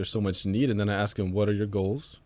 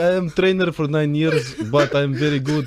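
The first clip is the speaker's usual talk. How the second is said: loud, pitched-up fake Russian accent, broken English; 6 semitones higher, 7 dB louder than usual. Joking about using it at the next consultation, in a put-on russian accent. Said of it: "I'm just gonna pull out the Russian accent".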